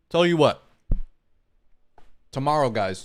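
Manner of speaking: speaking mid-bite with mouth full. A streamer talks to viewers while eating pizza: talking with mouth full. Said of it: "Sorry, eating some pizza".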